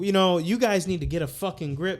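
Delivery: put-on heavy Arabic accent, laid on thick.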